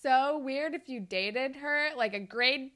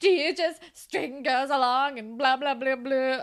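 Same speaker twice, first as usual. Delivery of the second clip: put-on dramatic voice, louder; 4 dB louder than usual. Retelling how someone acted during an argument about Drew, mock-dramatic imitation of Claire. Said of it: "Is being dramatic and stupid and is like".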